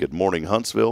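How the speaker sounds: ordinary talk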